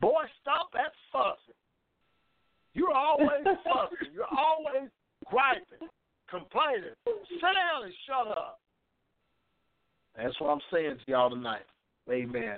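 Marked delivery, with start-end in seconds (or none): 0.0-8.6 scolding voice, pitched very high. Preacher on the radio tells listeners how Mama said it, imitating Mama scolding. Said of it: "I'm going to say it like Mama was saying".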